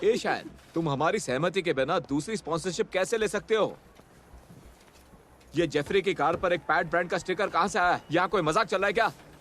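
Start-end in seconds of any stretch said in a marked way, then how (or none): 5.5-9.1 fast, rising, angry scolding tone. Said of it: "गुस्सा मत करिए".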